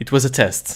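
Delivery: deadpan, dead serious, level delivery. In character, telling another character it was a test: with a straight face. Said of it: "with a straight face, I say".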